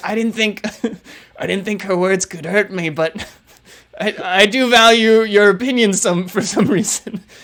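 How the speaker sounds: hurt, wounded monster voice, talking while half laughing. Voicing a creature hurt by an insult: hurt monster voice, laughing. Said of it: "It looks at you, and it's like".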